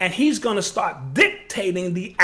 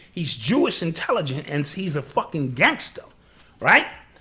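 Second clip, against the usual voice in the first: usual speaking voice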